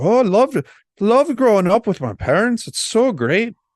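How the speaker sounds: very high, sing-song, swooping put-on Scottish accent. Imitating a woman who makes movies praising her childhood: attempted scottish accent. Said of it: "was that your attempt at a Scottish accent?".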